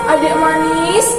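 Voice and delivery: ordinary delivery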